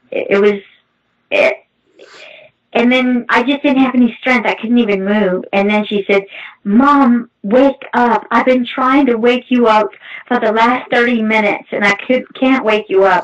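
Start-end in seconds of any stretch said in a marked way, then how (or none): none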